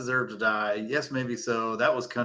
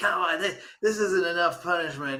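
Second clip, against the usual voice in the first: put-on arguing woman voice, higher; 7 semitones higher than usual. Retelling how the head woman in the scene argues: imitating a woman arguing. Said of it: "she's always, like, arguing".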